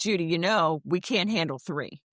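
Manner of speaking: ordinary talk, nothing marked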